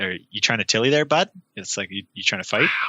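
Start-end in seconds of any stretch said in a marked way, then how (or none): 0.0-1.3 eastern Canadian Newfoundland accent. Explaining how people out east use a slang word, in a newfoundland accent. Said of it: "the Newfies out east".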